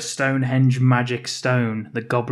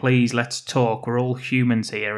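plain

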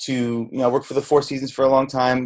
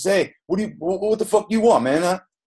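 put-on Brooklyn Italian chef voice, much higher pitch; 7 semitones higher than usual. Retelling how a head chef answered him in the kitchen, Brooklyn Italian chef impression. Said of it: "like total typical Brooklyn Italian chef says".

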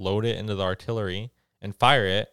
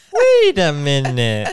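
very loud, high-pitched put-on little-kid voice; 5 semitones higher, 11 dB louder than usual. Showing off voice acting to the other speaker, in a child voice. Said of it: "I do a very good child voice".

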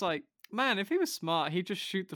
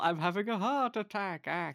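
mock groaning while talking; 2 semitones higher than usual. Retelling how a character fakes a heart attack: imitating a faked heart attack. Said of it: "he does the whole".

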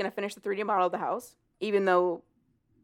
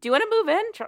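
high, cute, sweet cooing voice. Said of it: "which I thought was cute".

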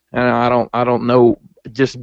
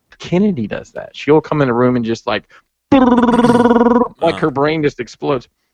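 ordinary talk

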